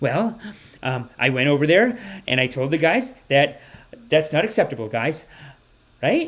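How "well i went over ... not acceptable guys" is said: mock tentative, unsure, hesitant delivery. Mocking how every sentence ends unsure, imitating Trudeau's unsure speech. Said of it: "So every sentence is like".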